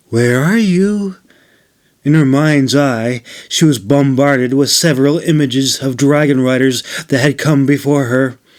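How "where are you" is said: calming, tender, soothing call, pitched up. Narrator reads Nora leaning forward and calling out to the dragon, soft, soothing voice. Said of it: "called in a soft, soothing voice".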